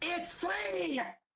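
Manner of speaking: high yell, called out. Voicing a character calling after leaving players: yelling after someone. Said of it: "she yells behind you".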